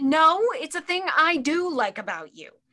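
high, shouted, argumentative tone. In an acted argument with Dave, answering his question: yelling. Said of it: "Why do you yell at me".

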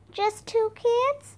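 tiny little voice, very high. Narrator reads Annie answering the shouting captain, in a small voice. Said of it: "Annie answered in a small voice".

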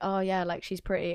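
ordinary talk, nothing marked

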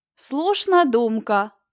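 sneering, mocking, tossed off. Narrator reads a character answering another's suggestion: mocking. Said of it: "глузливо кинула Кагікар".

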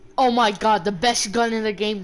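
loud, thick, heavy mocking sarcasm. Playing Fortnite with a teammate, reacting to a pickup, sarcastic. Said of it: "I'm being sarcastic".

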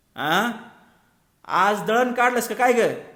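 loud and high. An old woman shakes her head and asks loudly. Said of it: "मान हलवून तिने मोठ्या आवाजात विचारले".

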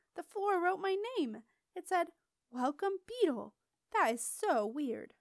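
thrilled, excited, high-pitched squeaky outburst. Beetle, rooted to the spot, speaks to Septimus: Beetle's excited high-pitched squeak. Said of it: "His voice slid ... into an excited, high-pitched squeak".

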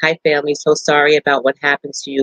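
ordinary talk

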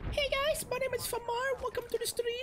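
put-on girly voice. Asked to do a girl's voice on stream, put-on girl's voice. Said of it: "Do a girl's voice?".

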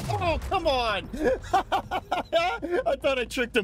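high, slow laughing groan of disbelief.

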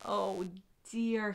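low, muttering voice. Narrator reads the doctor's words after taking the patient's blood pressure: muttered. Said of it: "he muttered".

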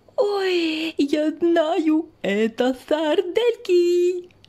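very slow, high, eager mouse cry, "oh" stretched. Narrator voices the little mouse watching the pencil draw, little mouse shouting. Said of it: "на стол забрался Мышонок".

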